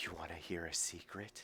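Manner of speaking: very soft, ghostly, eerie voice close to the ear. Voicing a hidden figure speaking behind a player: eerie voice in your ear. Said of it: "you feel an eerie chill, and you hear in your ear".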